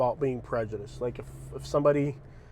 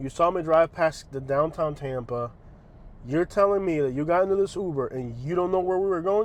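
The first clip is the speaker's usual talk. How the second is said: normal talking voice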